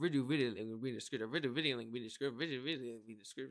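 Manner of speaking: very fast, rushed, rapid-fire repetition. Video host repeats the description line like a tongue twister, saying it very fast. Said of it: "When you get to saying it too fast many times".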